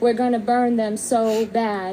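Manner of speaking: ordinary talk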